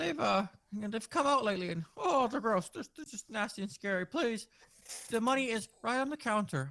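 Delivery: very high-pitched, frightened, scared pleading voice. Voicing a genuinely scared character: scared pleading. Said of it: "He's genuinely scared".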